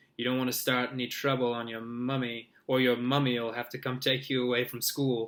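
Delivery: ordinary delivery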